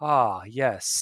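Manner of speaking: low, echoing, echoey voice. Speaker describing a scene, voicing Octavius answering a call: Octavius's echoey voice. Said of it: "you hear kind of that echoey voice".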